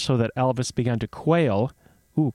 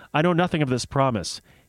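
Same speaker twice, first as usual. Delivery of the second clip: usual speaking voice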